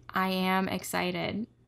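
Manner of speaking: mock robot-like monotone voice. Retelling a partner's answer about being excited: imitating a robotic voice. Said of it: "like a robot".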